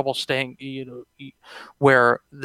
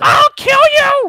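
mock screaming, higher and louder; 9 dB louder than usual. Retelling how Monica McPherson screams from the sidelines: imitating Monica McPherson screaming. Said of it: "screaming from the sidelines".

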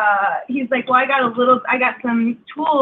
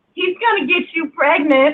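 high-pitched scream, kept light; 5 semitones higher than usual. Retelling a shout out of a car's open back window: imitating someone screaming.

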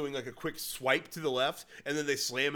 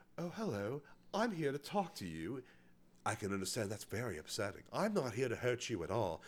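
soft, quiet feminine character voice; 3 semitones lower, 6 dB quieter than usual. Telling another speaker about a film, imitating the actor's female character. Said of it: "When he does the female character".

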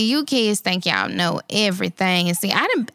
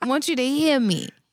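high, insistent, make-them-listen grandma voice; 5 semitones higher than usual. Speaking to the listener about behaving at work, in her 'hear me' voice. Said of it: "this is my hear me voice".

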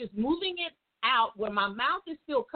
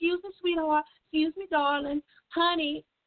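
play-acted honeyed, sweet, well-mannered polite voice; 4 semitones higher than usual. Retelling how she tried to get a woman's attention: imitating own sweet polite voice. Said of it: "the sweet voice of God in behind you".

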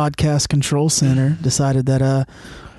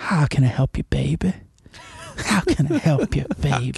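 low, soft, swooping radio-host voice; 4 dB quieter than usual. A podcast host shows how they ease off on air: low soft Delilah impression. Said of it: "And then I go real low".

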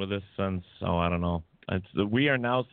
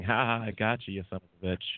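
put-on mocking, gloating laugh. Recounting a voice heard in their head after a phantom knock, imitating a laughing taunt. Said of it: "I hear in my head something laughing".

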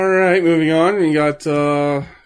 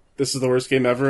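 ordinary talk

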